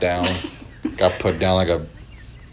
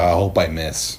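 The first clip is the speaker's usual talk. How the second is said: ordinary delivery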